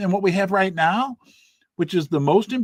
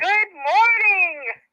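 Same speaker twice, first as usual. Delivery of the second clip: more enthusiastic, higher; 11 semitones higher than usual. Greeting everyone again after being asked: with a little more enthusiasm. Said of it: "Say it with a little more enthusiasm".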